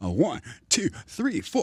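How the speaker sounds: rhythmic, swooping sing-song, pitch swinging up and down. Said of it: "I got that from [name]".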